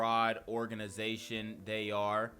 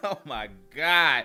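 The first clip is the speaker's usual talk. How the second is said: loud, slow laughter in disbelief. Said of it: "I don't know why I'm laughing".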